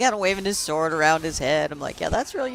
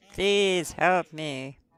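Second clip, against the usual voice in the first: mimicked disinterested voice, slower; 3 semitones lower than usual. Repeating a character's plea for help after commenting on it: imitating a disinterested plea. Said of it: "that was a very disinterested voice".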